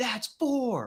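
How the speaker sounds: high mock scream. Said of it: "screaming at him".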